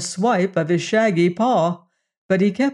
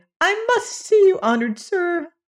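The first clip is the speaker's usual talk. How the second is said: very high, pitiful, pleading little squeak; 11 semitones higher than usual. A little alien that came running in pleads to be seen, pitiful squeak. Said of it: "squeaked the little alien pitifully".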